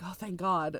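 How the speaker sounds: mock trembling whisper. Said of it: "shakily whispers".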